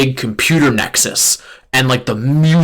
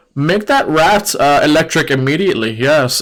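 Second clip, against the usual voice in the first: put-on German accent; 2 semitones higher than usual. Imitating a TikTok creator describing Pokemon: imitating a German accent. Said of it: "he has this, like, German accent".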